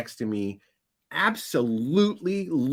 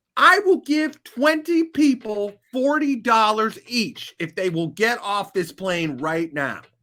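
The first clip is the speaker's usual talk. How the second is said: put-on furious, high-pitched angry voice; 7 semitones higher, 3 dB louder than usual. Retelling a passenger standing up in first class, imitating an angry man. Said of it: "He is so angry".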